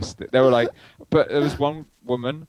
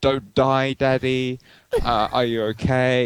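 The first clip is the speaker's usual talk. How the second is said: slow, put-on crying child voice. Telling a story about a traumatized kid, the speaker imitates the child crying. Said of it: "He was like crying".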